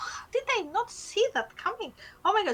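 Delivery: irritated, fed-up exasperation. Voicing a character on her turn in a game, annoyed about her sword. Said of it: "She's annoyed about her sword".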